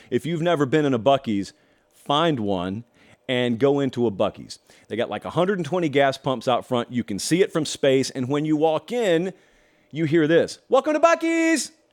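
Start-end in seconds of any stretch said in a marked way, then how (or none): 10.7-11.7 mock shrill shout, loud and very high. Describing walking into buc-ee's, imitating the front attendants: retelling a yelled greeting. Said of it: "They just yell".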